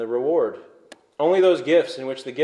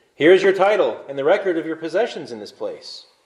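plain

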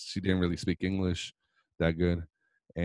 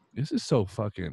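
plain

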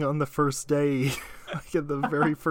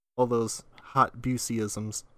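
ordinary delivery

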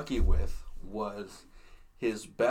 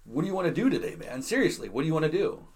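high, super-sarcastic, dripping with sarcasm; 6 semitones higher than usual. Retelling how a man read lines to another guy; mock super-sarcastic reading. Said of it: "reading it like all super sarcastically".

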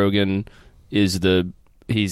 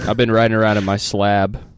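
ordinary talk, nothing marked

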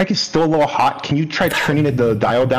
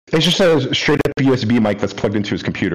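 usual speaking voice

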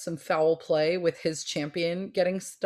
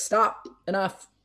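firm call, raised only a little; 2 semitones higher than usual. Retelling how Dumbledore stops Hagrid in the book: imitating Dumbledore yelling a little. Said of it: "yells at Hagrid a little bit".

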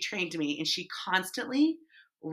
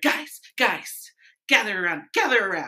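put-on energetic woman voice; 5 dB louder than usual. Retelling how she would gather everyone around, imitating an energetic woman. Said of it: "I just thought she was energetic".

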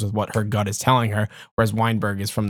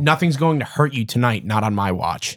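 normal talking voice

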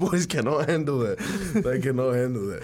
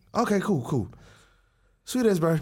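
put-on sheepish, awkward voice, higher; 5 semitones higher than usual. Retelling how a dad started a talk about a girlfriend: imitating sheepish dad. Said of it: "he gets really, like, sheepish".

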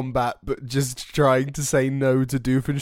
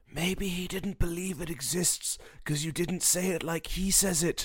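very quiet, hushed, half-whispered aside; 4 semitones higher, 11 dB quieter than usual. A player's character walks over to speak to someone, half-whispering. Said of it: "I walk over and I whisper".

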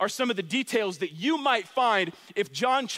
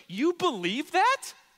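voice climbing up high on "that"; 6 semitones higher than usual. Demonstrating how a question should end, with a high rise on that. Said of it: "have your voice go up high like I do at the end".

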